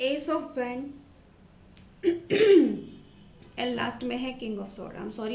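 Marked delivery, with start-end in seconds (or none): 3.6-5.0 hoarse, sore-throated, clearing the throat first. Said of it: "मेरा गला थोड़ा ख़राब है".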